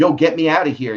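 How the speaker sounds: high, loud, screaming yell. Telling how the security guard screamed during the fight: retelling a scream. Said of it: "And he was screaming".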